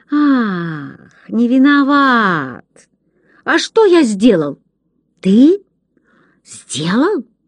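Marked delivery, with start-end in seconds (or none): 0.1-4.6 "Ах" drawn out in a near-affectionate, tender drawl. The father, arms crossed, answers his son after staring at him, drawling, almost tender. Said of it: "протянул почти ласково".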